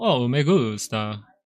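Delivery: put-on Spanish spoken with an Italian accent. Imitating a brother who speaks spanish like an italian: imitating brother's spanish with italian accent. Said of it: "he speaks Spanish like an Italian".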